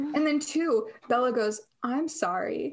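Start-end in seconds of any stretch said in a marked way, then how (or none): 1.8-2.7 put-on British accent. Recapping a scene and quoting Bella's apology, in Bella's British accent. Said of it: "but she says it in a British accent".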